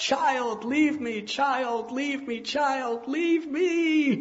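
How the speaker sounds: tumultuous, very high, loud shriek, "me" drawn out. Narrating her cries as the child squeezes the life from her: screaming in tumultuous voice. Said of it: "screaming out with a tumultuous voice".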